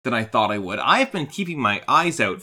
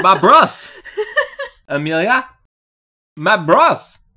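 loud, drawn-out Eastern European accent; 7 semitones higher, 8 dB louder than usual. Answering who calls him [name], in an Eastern European accent. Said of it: "I don't know why I'm going Eastern European".

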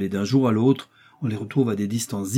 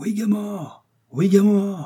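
very high, slow, drawn-out joyful cry; 10 semitones higher than usual. Reading a story, a character answers his companions with a joyful cry. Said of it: "s'écria le joyeux Joey".

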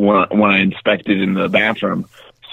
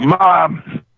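put-on acted-out childlike high half-shout, held back; 9 semitones higher than usual. Recalling calling for his mom as an adult, retelling a shout. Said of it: "so I'd shout".

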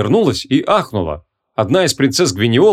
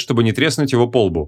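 plain reading voice

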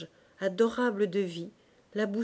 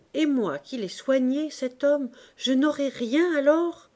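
sudden, loud, high-pitched exclaiming outcry; 5 semitones higher, 5 dB louder than usual. The concierge answering the young woman's claim to everything, crying out. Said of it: "s'écria la portière".

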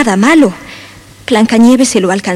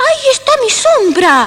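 very high, eager, excited exclamation; 14 semitones higher than usual. An elf peering in at three children's window, exclaiming. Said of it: "exclamó Peter Pan".

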